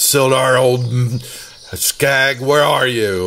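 high-pitched, drawn-out calling dwarf voice. A game master narrates the dwarf bursting through, bellowing as Gundren. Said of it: "the dwarf Gundren bursts through and bellows out".

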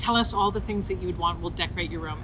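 ordinary talk

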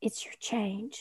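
unvoiced, very soft whisper.

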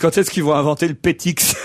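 plain

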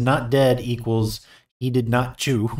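ordinary talk

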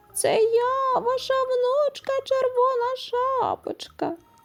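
very high, thin, tiny put-on child's voice. Reading a fairy tale, the wolf answers the grandmother at her door in a thin little voice. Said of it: "відповів хитрий вовк тоненьким голосом".

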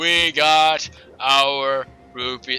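loud, very slow, mechanical robotic delivery. Repeating a line just said while playing a game, robotic voice. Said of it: "I sound like a robot".

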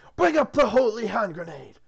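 yelling loudly. A narrator reads a character's line in a scene, shouting. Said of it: "Shouting, Arthur says".

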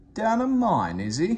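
chuckling through the words, very high pitch. Gordon, about to pull Thomas out, reacts to the news, laughing. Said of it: "laughed Gordon".

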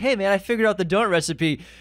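put-on beaming voice. Retelling a cook walking up to his frantic boss: imitating a big kid smile voice. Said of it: "like a big kid smile".

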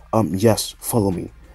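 ordinary delivery

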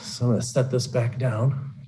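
winded, short-of-breath speech. After spinning the audience around, setting things back down, out of breath. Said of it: "now that I'm out of breath".

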